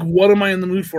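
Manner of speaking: ordinary talk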